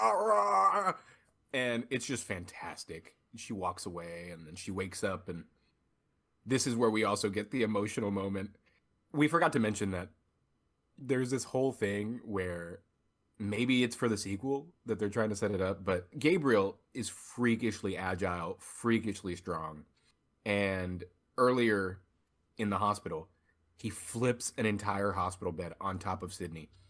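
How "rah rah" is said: high, loud, raging monster roar. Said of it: "he goes up and he's like".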